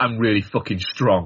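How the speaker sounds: imitated flat, deadpan delivery. Retelling a movie line by Craig Robinson: imitating Craig Robinson's deadpan. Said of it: "in complete deadpan face is he just goes".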